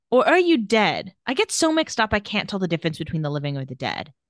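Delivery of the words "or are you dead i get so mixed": ordinary delivery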